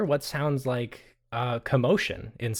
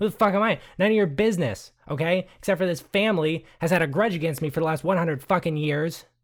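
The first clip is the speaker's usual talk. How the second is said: angry outburst, higher pitch; 5 semitones higher, 4 dB louder than usual. A character, asked by a woman of the family who he is, angry outburst. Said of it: "I think you need to calm down".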